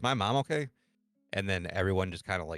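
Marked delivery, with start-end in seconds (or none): 0.0-0.7 acted terrified, frightened voice, pitched up. Retelling asking hospital staff a question: retelling own terrified question. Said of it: "I was just kinda terrified".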